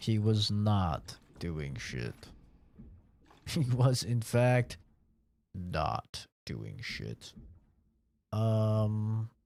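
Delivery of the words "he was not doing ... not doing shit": deliberate, slow storybook narrator voice. Commenting on his own mistake, the speaker switches to narrator voice. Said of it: "Narrator voice".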